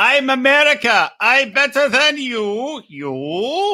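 final "you" dragged out and stretched. Retelling what she said with a selfie stick, imitating Russian Yoda speech. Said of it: "she is Russian Yoda".

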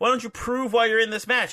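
very high, angry, upset shouted voice. Retelling how Deppen got in Trish's face: imitating Deppen yelling upset. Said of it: "Why are you yelling at her for?".

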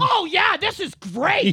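very high, slow, drawn-out yell. Describing editing in their room, the speaker acts out their own yelling. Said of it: "I'm in my room yelling at myself going".

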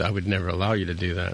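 ordinary talk

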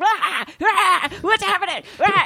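very high, slow, shrieking villain bluster. Imagining how the villain would react to the twins: Cobra Commander voice. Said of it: "if that was Cobra Commander, you know he would have been like".

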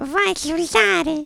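very high, piping, thin, tiny voice. Retelling what a young punk asked you, in a very thin voice. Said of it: "com uma voz finíssima".

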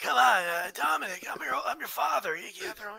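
raspy, strained voice, damaged-sounding throat. Mocking a wrestler's promo, in that Rey voice like after trachea surgery. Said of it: "that Rey voice, like he got trachea surgery".

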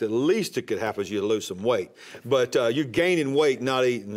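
normal talking voice

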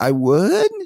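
statement with pitch turning up on would. Retelling how a man answered yes with his voice going up, rising on would. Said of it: "he answered like this, where he said the affirmative, but his voice went up at the end".

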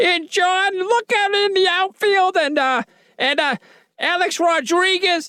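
very high, stretched-out announcer voice. Doing an impression of a woman calling a baseball game. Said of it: "You actually did a pretty good, pretty good impression".

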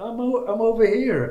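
high-pitched, giggly, laughing mock tone.

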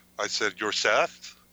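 usual speaking voice

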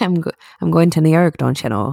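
put-on Irish accent. Coaching another speaker into a put-on accent: Irish accent. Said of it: "transition right into the Irish accent".

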